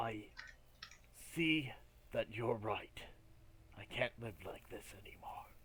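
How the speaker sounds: barely audible, soft, hushed whisper. A character leans over and gives his answer, whispering. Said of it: "he leans over and he whispers".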